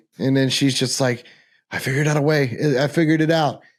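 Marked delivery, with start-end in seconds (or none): 1.7-3.5 frantic, hopeful, desperate, crazed insistence. Retelling a character's line from a scene: imitating desperate craziness. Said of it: "that craziness, the desperation".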